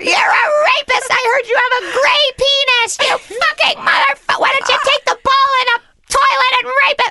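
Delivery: put-on very high, drunken, wasted screaming. Retelling yelling at a player from the end-zone seats: retelling drunken screaming. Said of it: "I'm just screaming at Ben Roethlisberger".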